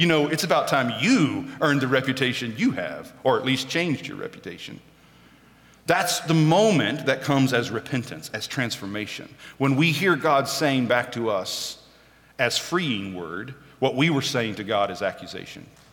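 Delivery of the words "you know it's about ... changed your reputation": normal talking voice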